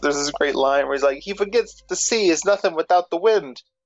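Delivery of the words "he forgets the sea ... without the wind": put-on high-pitched, laid-back Brooklyn accent. Quoting a great line from the wind god Aeolus: Brooklyn accent as Aeolus. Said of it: "Brooklyn accent".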